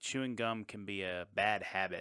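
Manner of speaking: normal talking voice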